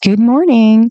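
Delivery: gentle, sweet, calming, soothing voice. Retelling how a neighbor answered the phone: imitating a sweet, soothing greeting.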